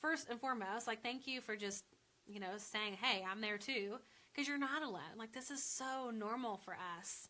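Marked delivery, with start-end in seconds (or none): none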